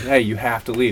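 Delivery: ordinary delivery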